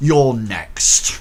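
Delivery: dropped, deep-voiced delivery. A figure turns around and says it to the player, in a deep voice. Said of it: "in quite um, a, a deep voice".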